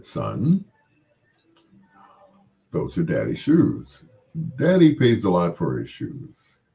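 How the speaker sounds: deepest low voice, swooping and animated. Retelling how he spoke to his son about daddy's shoes: deepest voice. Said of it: "in my deepest voice".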